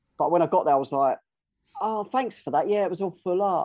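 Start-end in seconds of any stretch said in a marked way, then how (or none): 1.8-3.7 acted, excessively courteous, sugary politeness. Retelling own reply after a wasted trip: imitating own over-polite reply. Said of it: "over polite".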